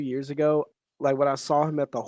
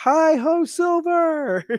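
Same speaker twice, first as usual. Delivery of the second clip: high-pitched shouting. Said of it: "he shouted back".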